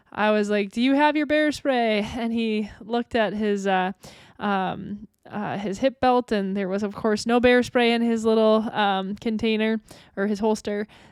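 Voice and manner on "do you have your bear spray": put-on, light, calling-out voice. Retelling calling to someone down the trail, the speaker reenacts yelling. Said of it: "waving my arms and yelling".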